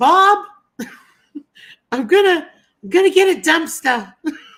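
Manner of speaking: high, loud, put-on New York accent. Retelling what she always said to the speaker's dad: put-on new york accent. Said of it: "in her New York accent".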